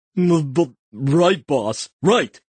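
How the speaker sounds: sleepy mumbling, half-asleep. Narrator reads a sleeping character's reply after his tail is twisted, mumbling in his sleep. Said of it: "and he mumbles".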